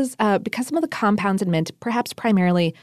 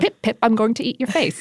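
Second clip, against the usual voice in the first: put-on British accent. Joking that nobody needed a British version of Pennywise, doing a British Pennywise impression. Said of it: "we didn't need a British version of Pennywise".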